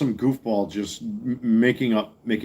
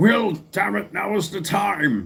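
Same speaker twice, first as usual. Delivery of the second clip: put-on higher old man voice, time stretched out; 8 semitones higher than usual. Try out a line the character would say, in an old man Patrick Stewart voice. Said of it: "old man Patrick Stewart there".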